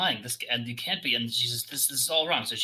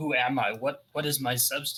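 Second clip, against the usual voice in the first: crying, sobbing while speaking. Narrator voices a being who fears she is not celestial, crying. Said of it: "And she's crying".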